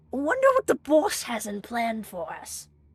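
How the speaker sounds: rough, grating, gravelly, scratchy, ear-piercing rasp. Narrating a story, voicing an unseen voice heard getting closer: gravelly, scratchy, ear-piercing voice. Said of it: "gravelly, scratchy, ear-piercing end of uh a voice and goes".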